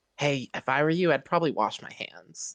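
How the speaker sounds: hushed, half-whispered voice. Speaking in character to Soul about washing hands: half-whispering. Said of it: "I whisper to Soul".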